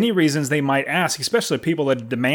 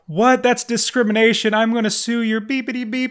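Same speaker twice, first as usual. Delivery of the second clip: put-on furious, high-pitched screamed outburst; 8 semitones higher than usual. Retelling a rejected tenant's reaction: imitating someone screaming. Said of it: "he started screaming off the top of his lungs".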